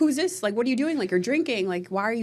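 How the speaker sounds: mock angry scolding. Recapping a scene to a co-viewer, acting out a woman getting mad. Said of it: "she was getting all mad".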